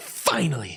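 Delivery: put-on excited movie character voice. Retelling a scene from Mrs. Doubtfire: imitating a Mrs. Doubtfire line. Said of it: "And he's just like".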